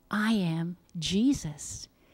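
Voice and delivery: ordinary talk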